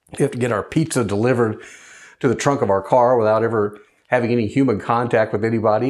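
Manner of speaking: usual speaking voice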